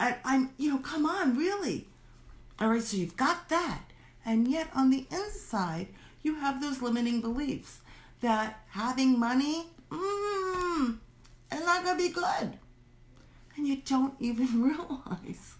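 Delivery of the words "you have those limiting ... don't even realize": giggling through little giggles, drawn-out mmm. Speaker addressing listeners, laughing at themselves: giggling while talking. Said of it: "I'm giggling at myself".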